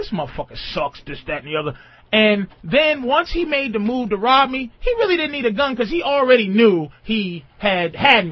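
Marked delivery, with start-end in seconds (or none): 0.0-1.0 mutter under the breath, lower and quieter. Retelling what a robber said under his breath: imitating someone muttering under breath. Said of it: "saying shit under his breath".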